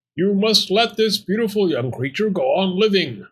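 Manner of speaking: high, shouted, demanding yelled appeal. In the tale, the talking bone addresses the fox, yelled. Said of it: "the bone yelled".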